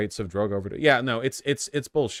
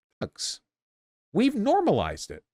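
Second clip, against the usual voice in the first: very high put-on voice, swinging wildly in pitch; 12 semitones higher than usual. Repeating a video's line to show how it sounds: Tucker Carlson voice. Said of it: "when I say it in his voice".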